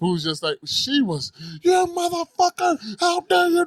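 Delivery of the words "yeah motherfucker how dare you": play-acted very high, shrill, hysterical screaming yell. Retelling how an older woman yelled at a cop, imitating hysterical screaming. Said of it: "she's yelling, screaming hysterically".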